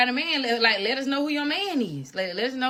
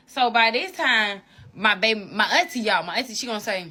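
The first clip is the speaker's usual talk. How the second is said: plain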